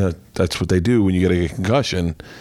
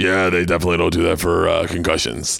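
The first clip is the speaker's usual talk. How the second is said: deep, low, rough, creaky gator voice. Retelling what Jim Florentine said back, in Jim Florentine's deep gator voice. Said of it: "in that deep fucking gator voice of his goes".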